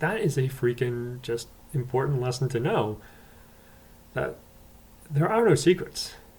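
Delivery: normal talking voice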